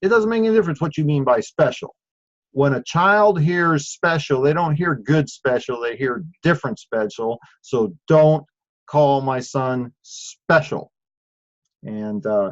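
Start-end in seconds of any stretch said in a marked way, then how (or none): none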